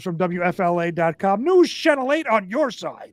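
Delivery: on-air radio announcer voice. Crediting a Florida news station while reading a story, in a radio voice. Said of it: "truly a radio voice".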